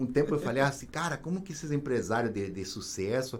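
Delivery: soft, hushed, low confiding voice.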